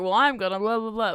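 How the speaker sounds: put-on energetic cartoon cat voice. Reviewing the movie, mocking how Garfield talks: imitating energetic movie Garfield. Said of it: "He's talking like this and is like".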